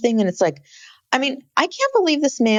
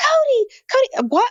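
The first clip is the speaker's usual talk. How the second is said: very high frantic calling out. Describing a frantic scene, act out Robin behind Cody as he cuts a tree, imitating someone yelling. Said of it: "Robin is behind him yelling".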